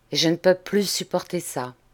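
ordinary delivery, nothing marked

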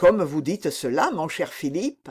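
ordinary delivery, nothing marked

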